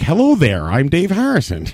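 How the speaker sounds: animated, high, swooping put-on neighborly voice. Imitating how Dave Harrison, who grew up around them, talks: imitating Dave Harrison. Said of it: "Dave Harrison grew up around us, and he's like".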